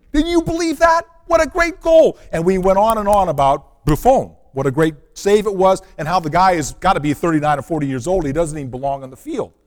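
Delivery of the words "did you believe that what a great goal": very high, loud, thrilled, shrieking scream. Recalling screaming with your sons over the save: retelling an excited scream. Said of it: "my sons and I were screaming".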